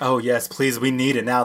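put-on, super campy drag queen voice. Retelling a film scene where a drag queen answers the priest's prayers: super campy drag queen voice. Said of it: "super campy".

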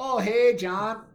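very high, loud, over-the-top Canadian accent. On Rugby Pick'em, a host greets John in a put-on Canadian accent. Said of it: "we'll stop our Canadian accents there".

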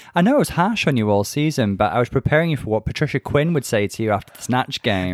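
ordinary delivery

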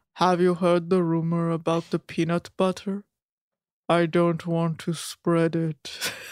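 low, flat, toneless, deadpan monotone. Retelling a male model's dad jokes, the speaker delivers them in a monotone. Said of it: "a bunch of monotone ass dad jokes".

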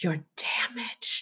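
slow, hushed, self-loathing whisper.

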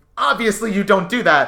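mock irritated exasperation. Retelling Michael's line to his family, imitating an annoyed voice. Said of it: "he is so annoyed".

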